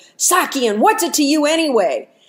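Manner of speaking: harsh yell, snapped back harshly. Retelling the laborer whipping around to answer the old man, retelling a harsh yell. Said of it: "he yells really harshly".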